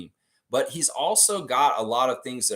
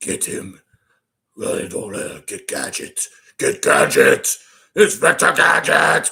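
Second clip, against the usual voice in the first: put-on deep, crazy villain voice, higher and louder; 4 semitones higher, 9 dB louder than usual. Showing the chat a quick cartoon villain impression: Doctor Claw voice. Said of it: "let me see if I can do a Doctor Claw".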